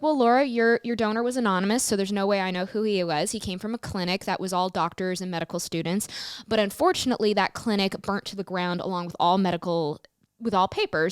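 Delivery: plain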